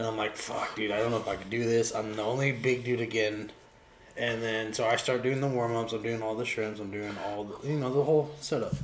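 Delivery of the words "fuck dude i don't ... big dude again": ordinary talk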